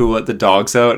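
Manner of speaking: plain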